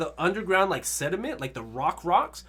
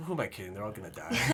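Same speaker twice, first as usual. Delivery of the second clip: secretive half-whisper under the breath; 9 semitones lower, 7 dB quieter than usual. Retelling a scene where Levi secretly talks to himself: half-whispering as Levi. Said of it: "he just whispers to himself".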